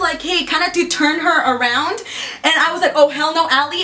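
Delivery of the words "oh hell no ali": normal talking voice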